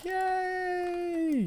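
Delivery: play-acted, very high, gleeful, drawn-out cheer. Retelling own chatty mood during streams: imitating own happy on-stream self. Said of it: "I get real chatty and, and happy".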